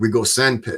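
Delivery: English with a put-on German accent. Recounting what a man said after getting orders for Vietnam, in his German accent. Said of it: "in his German accent he says".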